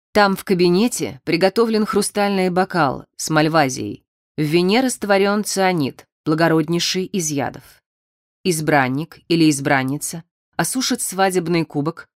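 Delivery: ordinary delivery, nothing marked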